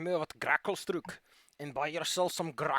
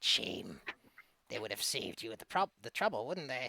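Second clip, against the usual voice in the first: put-on cackling old lady voice, quieter; 5 semitones lower, 4 dB quieter than usual. A game master voices an old lady blocking a boat, to a player's character, in a cackling old lady voice. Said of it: "you hear a cackling voice coming from the edge of the water. / a nice old lady with a crooked nose, green skin. Not exactly the pristine beauty you might expect, but man, that hair goes to her feet. /".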